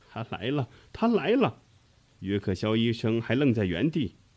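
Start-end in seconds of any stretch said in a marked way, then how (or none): 0.2-1.7 high, quavering, trembling, terrified voice. Reading a story, a collapsed woman points at the door, trembling voice. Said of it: "哆哆嗦嗦地指着门口，颤声地说".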